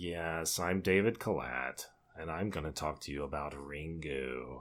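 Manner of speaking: flat, very low, slow drone with stretched words. Imitating a man introducing his talk on Ringu: monotone David Kalat impression. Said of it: "he's like our monotone guy. He's like".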